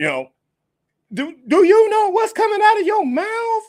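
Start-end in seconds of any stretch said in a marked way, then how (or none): 1.1-3.6 loud, very high-pitched, squeaking put-on voice. Retelling what someone said, in Chris Tucker voice. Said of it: "in my Chris Tucker voice".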